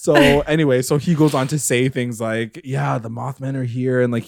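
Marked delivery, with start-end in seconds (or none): 2.6-4.0 unhinged, crazy-sounding, absolutely insane voice. Recapping a scene, the speaker quotes a man: imitating a man sounding crazy. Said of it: "he sounds crazy".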